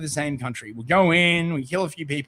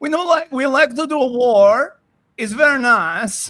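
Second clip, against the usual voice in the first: loud, high, mock generic Middle Eastern accent; 9 semitones higher, 7 dB louder than usual. Mocking the way a man talks, mock Borat-like accent. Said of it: "He sounds like Borat".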